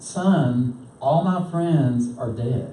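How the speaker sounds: ordinary delivery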